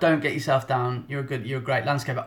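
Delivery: ordinary talk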